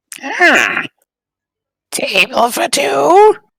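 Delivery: very high, creaky little voice. The game master voices a creature greeting the arriving players in a creaky little voice. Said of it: "creaky little voice".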